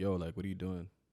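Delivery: ordinary delivery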